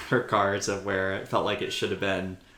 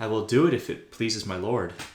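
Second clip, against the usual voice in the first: put-on cold dismissive tone. Retelling a book scene where Sansa answers Tyrion: imitating Sansa's cold shoulder. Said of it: "such a cold shoulder".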